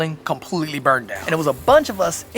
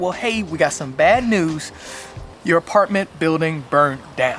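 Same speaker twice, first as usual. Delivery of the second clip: normal talking voice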